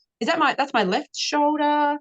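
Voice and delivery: put-on high, confused child voice.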